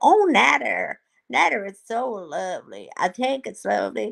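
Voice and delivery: put-on drawling Southern accent. Retelling how Dee Dee reacts to the food; imitating Dee Dee. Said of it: "I don't know why she has a southern accent".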